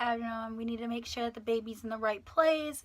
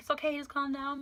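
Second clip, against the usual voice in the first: mock-tearful, soothing voice, higher; 3 semitones higher than usual. Retelling mom comforting you after the pregnancy news; imitating mom crying, soothing. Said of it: "And mom starts crying a little bit".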